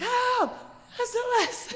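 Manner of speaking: mock, very high-pitched, piercing, shrill screams. After a car crash, the speaker flags down a passing car, retelling screaming for help. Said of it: "screaming like".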